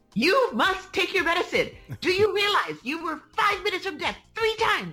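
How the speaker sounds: very high, shrill, swooping, screaming scolding tone. Recounting a hospital stay, the speaker imitates the cardiologist: imitating the cardiologist screaming. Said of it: "she's screaming at me going".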